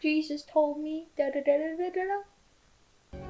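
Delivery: slow, tortured, mock pitiful sad-puppy voice. Speculating how someone's preaching during the war sounded, mock tortured, sad puppy voice. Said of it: "in a tortured, sad puppy dog voice saying".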